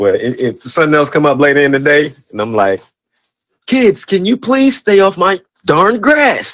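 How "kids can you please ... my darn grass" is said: put-on voice, high-pitched and drawn out. Acting out quoting a movie line to kids: Stanley from Friday voice. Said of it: "Stanley from Friday?".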